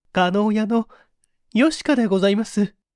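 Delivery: anxious. A woman at the gate introduces herself to the man who opened the door; worried. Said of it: "心配そうな青い顔をしていった".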